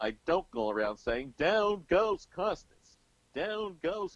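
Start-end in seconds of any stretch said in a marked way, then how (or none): 1.4-4.2 high, slow, drawn-out game-announcer delivery. Showing how he talks only when announcing a game: game-announcing voice. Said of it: "when I am announcing a game".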